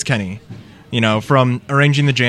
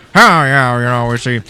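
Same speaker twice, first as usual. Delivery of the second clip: loud, bad, put-on Cajun accent; 5 dB louder than usual. Speaker imitating a man who loves their impressions, bad impression of a Cajun-accented man. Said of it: "I do impressions of him".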